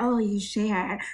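put-on whisper. Imitating a show character repeating back what the others said: imitating someone whisper-repeating. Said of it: "whisper repeating the things that they say to her".

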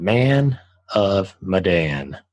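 slow, drawn-out delivery.

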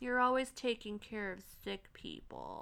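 swooping, sing-song voice with wide pitch swings. Imitating Rachel complaining to her father: Rachel voice. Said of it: "I gotta do my Rachel voice".

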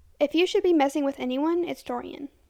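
plain reading voice

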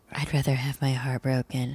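hushed, confiding stage whisper under the breath. Mocking a man's line to a woman: imitating a half-whisper. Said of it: "whispering to her and he's like".

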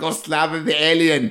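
put-on high-pitched German accent. Imagining a film director on set: Roland Emmerich German accent. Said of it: "Can you imagine Roland Emmerich, the German accent?".

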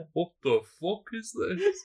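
put-on Bradford accent. Retelling a man's reaction to a puddle around his foot, in a Bradford accent. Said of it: "Is he from the UK now?".

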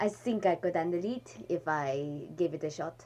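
put-on French accent. Deciding to answer in French, the speaker does it in a French accent. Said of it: "I guess I'll do it in a French accent since I can".

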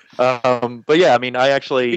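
ordinary talk

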